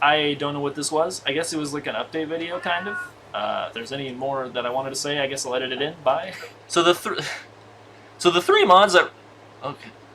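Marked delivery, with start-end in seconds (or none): 6.7-9.9 very loud voice, cracking mid-phrase. A video creator restarts a sentence as the voice cracks. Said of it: "what was that voice crack?".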